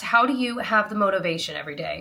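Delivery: plain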